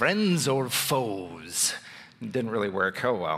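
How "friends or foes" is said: movie-trailer announcer voice, foes drawn out. Speaker trying out a voice for a tough question: movie trailer voice. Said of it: "Like a trailer voice".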